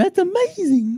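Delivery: very high-pitched, put-on character voice. Quoting what another person would say, in best Reggie voice. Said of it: "In his best Reggie voice".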